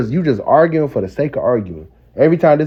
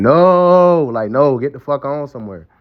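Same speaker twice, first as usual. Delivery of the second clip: weary, worn-down voice with a drawn-out "no". Retelling the man's refusal to the woman: imitating a tired man. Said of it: "That's a man that's tired".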